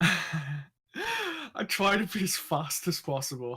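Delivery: breathless panting. Back after rushing off, a friend says you're panting: out of breath. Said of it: "you're like panting and shit".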